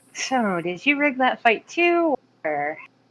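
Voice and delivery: hushed, high half-whisper. Playing a character who half-whispers a snarky question into another's ear: half-whispering in character. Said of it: "I'm gonna whisper something to Salas".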